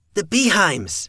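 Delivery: very high-pitched, overly pleased, a little too happy. Evan answers Blake's question about who is attacking, a little too happy. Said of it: "sounding just a little too happy to see me".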